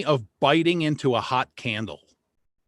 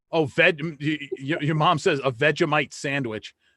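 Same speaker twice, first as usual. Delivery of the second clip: normal talking voice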